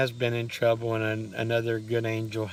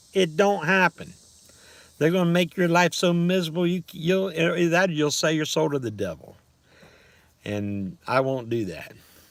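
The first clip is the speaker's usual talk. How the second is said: aggravated, raised, agitated, worked-up ranting; 6 semitones higher, 4 dB louder than usual. Complaining about people trying to bleed the system: agitated rant. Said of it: "sorry about my rant".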